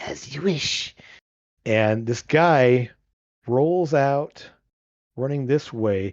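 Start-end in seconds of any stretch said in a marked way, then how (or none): 0.0-1.0 odd sing-song rasp, breathy and lilting. Narrating a game, the speaker voices a figure answering in Sylvan: strange, lilting, raspy voice. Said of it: "strange, lilting voice that's a little bit more of a rasp".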